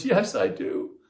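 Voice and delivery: tender voice, gently delivered. Retelling how a woman answered when asked if she wants to be free, retelling her tender reply. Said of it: "she said with this tender voice".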